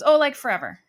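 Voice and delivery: play-acted flippant brush-off. Retelling a husband's answer about how long it went on: imitating a flippant reply. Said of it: "Just super flippant about it".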